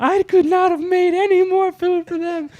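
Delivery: mock tearful wail, very high, loud, drawn-out. Retelling a tearful reply to an angry call: imitating someone crying.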